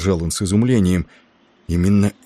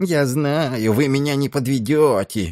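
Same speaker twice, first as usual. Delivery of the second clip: squeaky, sneering mock voice, pitched high; 7 semitones higher than usual. Addressing his comrades, a character mimics the old man, squeaky mocking mimicry. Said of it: "передразнил он пискляво".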